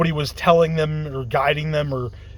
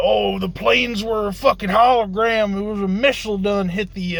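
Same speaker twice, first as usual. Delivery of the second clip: put-on rural Southern accent, pitched up; 5 semitones higher than usual. Quoting the crazy claims people have been inoculated with: redneck Southern accent. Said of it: "I'm using the redneck voice again".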